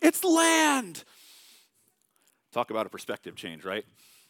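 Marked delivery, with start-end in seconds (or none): 0.0-1.0 thrilled shout, very high and loud. Acting out a guy on a boat spotting land: yelling excitedly. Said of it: "You got a guy on a boat yelling".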